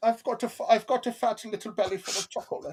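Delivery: very high, put-on German accent, child voice. Talking about house plants with another speaker, putting on a fat German kid accent. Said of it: "my fat German kid accent".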